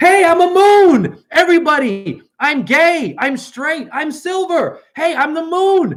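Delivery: very high, showy, boastful yelling. Acting out the moon announcing itself: mock yelling as the moon. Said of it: "Is she yelling at you saying".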